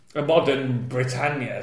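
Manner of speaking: ordinary talk, nothing marked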